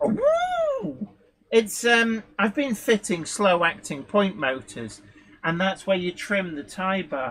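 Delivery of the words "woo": woo stretched long and very high. Having noticed suddenly sounding like Frankie Howerd, let out a Frankie Howerd-like woo. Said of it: "sound like Frankie Howard".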